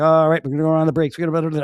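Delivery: loud, rapid, rattled-off auctioneer-style patter. Retelling how a technician in a video talked; fast auctioneer voice. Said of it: "the technician sounded like an auctioneer".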